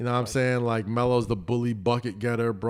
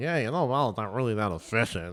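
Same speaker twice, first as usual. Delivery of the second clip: put-on voice of a numbers nerd. Ranting about stat geeks and nerds, quoting them: put-on nerd voice. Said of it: "that voice when we're talking about nerds".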